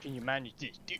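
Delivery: half-whispered, muttered aside to oneself. Muttering an aside to yourself while the others talk, half-whispered to self. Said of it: "I'm whispering that to myself".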